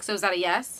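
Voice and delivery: ordinary talk, nothing marked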